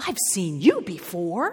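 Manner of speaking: gasped out, gasping. A character sees a visitor swoop in through the tent door and speaks gasping. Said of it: "gasped Maisie".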